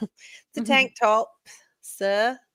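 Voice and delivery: very slow, high, put-on British accent. Answering what Dan is wearing while practicing a British accent. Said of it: "practicing my British accent".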